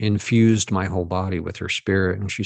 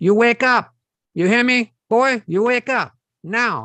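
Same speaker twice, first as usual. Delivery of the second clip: shrill, very high, loud Filipino grandmother voice; 6 dB louder than usual. Recounting a grandmother shaking a box of bones at him, Filipino grandmother voice. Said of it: "a voice almost like a Filipino grandmother".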